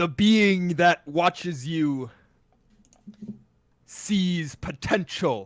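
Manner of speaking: thundering, booming, threatening voice filling the room. Speaking as the Oracle to the whole room, in a booming Oracle voice. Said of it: "the booming voice of the Oracle reaches out".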